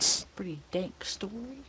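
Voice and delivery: unvoiced, hushed whisper.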